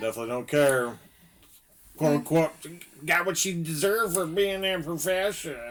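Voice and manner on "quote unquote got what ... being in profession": odd, mocking, dismissive put-on voice, pitched up. Imitating people who dismiss a victim: weird put-on voice mocking dismissive people. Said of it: "That was a real weird voice".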